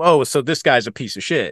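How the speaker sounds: ordinary talk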